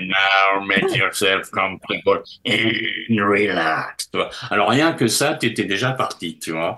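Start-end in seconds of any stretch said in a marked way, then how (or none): 0.0-4.1 raspy, hoarse, broken voice. Retelling a hypnotist's instructions, in her tobacco-broken smoker's voice. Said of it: "a la voix cassée par le tabac".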